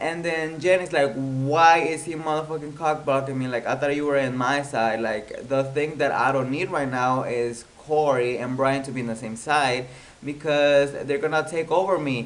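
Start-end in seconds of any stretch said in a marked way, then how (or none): none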